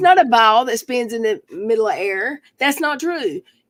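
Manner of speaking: ordinary talk, nothing marked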